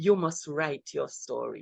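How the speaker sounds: very quiet, hushed, close-to-the-ear delivery. Retelling what a doctor said after church: imitating someone speaking very quietly. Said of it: "Very quietly".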